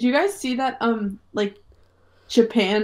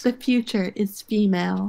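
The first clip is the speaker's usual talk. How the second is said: usual speaking voice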